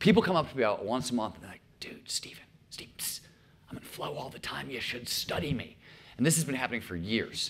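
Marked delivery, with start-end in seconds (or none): 1.8-5.8 whispered, close, secret and hushed, confiding. Retelling what people who come up to Steven say, whispering the quote.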